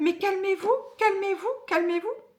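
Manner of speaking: high, mock relentless nagging, insistent repetition. Retelling how a woman kept telling a crying person to calm down: imitating someone insistently repeating. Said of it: "elle arrêtait pas".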